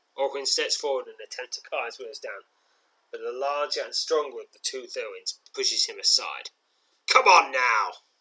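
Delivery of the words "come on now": very loud, aggressive, snarled delivery. The larger Thurin shoves Orwin aside and challenges you, snarling. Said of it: "He snarls".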